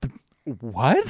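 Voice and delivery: halting, stumbling, utterly aghast disbelief. Imitating Julia Louis-Dreyfus's face when he does something: imitating Julia Louis-Dreyfus aghast. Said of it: "she is aghast every time".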